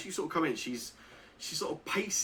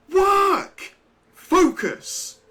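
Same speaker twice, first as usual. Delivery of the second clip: piercing, shrill scream, very high and very loud; 15 dB louder than usual. A game master voices a figure rounding on a player's character: screaming. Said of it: "She screams at you and she says".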